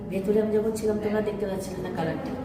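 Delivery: ordinary talk, nothing marked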